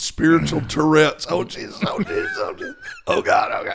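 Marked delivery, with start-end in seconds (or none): 1.3-3.8 mock, very high crying out in pain. Describing calling out from a rib injury: imitating yelling out in pain. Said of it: "Just yelling out".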